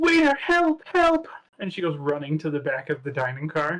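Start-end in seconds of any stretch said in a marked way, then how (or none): 0.0-1.3 very high, frantic, panicked cry. Voicing a woman fleeing to the back of the dining car: woman calling for help. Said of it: "she now gets up and she's just kind of like".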